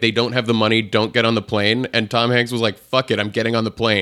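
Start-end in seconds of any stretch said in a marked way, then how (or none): none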